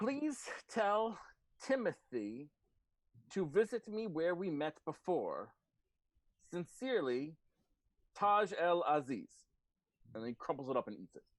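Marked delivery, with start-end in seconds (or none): 0.0-9.3 high, very slow kobold creature voice. Voicing a kobold reading a scrawled note aloud: kobold reading a note aloud. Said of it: "he furrows his, like, kobold brow, and he says".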